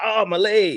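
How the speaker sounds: high cartoon voice. Imitating a cartoon faking a leg injury: SpongeBob voice. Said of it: "You know that SpongeBob. He's like".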